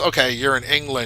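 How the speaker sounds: plain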